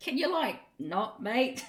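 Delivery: put-on broad Australian accent. Recalling a cast member nearly fighting mid-performance, broad Australian accent. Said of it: "said in a broad Australian accent".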